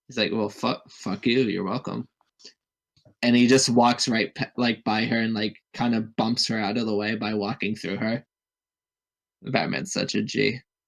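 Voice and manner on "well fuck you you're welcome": mock sarcastic delivery. Retelling a character's reply to a woman in a scene, mock-sarcastic. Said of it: "like in a sarcastic tone".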